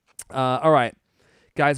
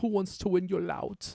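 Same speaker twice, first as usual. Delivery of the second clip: put-on high, slow, drawn-out thick German accent. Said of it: "I wish Leon Dieter was here to say that. He'd be like".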